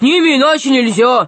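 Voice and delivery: growling troll voice. Narrator reading the troll's retort to the four-eyed one: growling troll voice. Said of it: "прорычал тролль".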